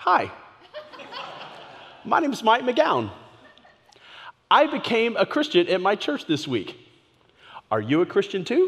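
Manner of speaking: put-on child's earnest, most mature voice, swooping pitch. Retelling a phone call to a stranger as a kid, in his most mature 11-year-old voice. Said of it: "in my most mature 11-year-old voice i could muster".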